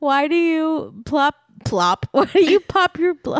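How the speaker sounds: high, helpless, uncontrollable laughter breaking words. Podcast host questioning a co-host while both keep laughing: laughing uncontrollably. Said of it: "we can't stop laughing".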